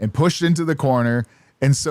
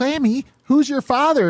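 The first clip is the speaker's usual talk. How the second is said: pitched way up, puppet-style; 11 semitones higher than usual. Retelling what someone asked Glammy, imitating Elmo voice. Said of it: "in the Elmo voice".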